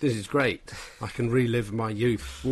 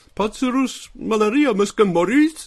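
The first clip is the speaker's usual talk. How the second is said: very high, loud, squeaky cartoony voice; 12 semitones higher, 9 dB louder than usual. Showing how [name]'s Catalan dubbing sounds to make people laugh: cartoony Catalan-dubbed [name] voice. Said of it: "I have to talk in this completely different cartoony voice".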